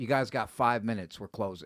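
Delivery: very stern, low voice. Retelling what a guy at the store said as they walked in, very stern. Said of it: "like very stern".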